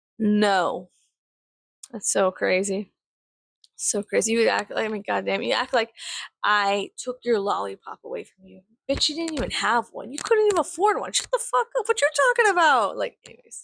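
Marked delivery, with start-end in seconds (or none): 5.4-13.0 heated, mad tirade, swooping and climbing. Ranting at people who act like something was taken from them: mad. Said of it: "I'm just mad".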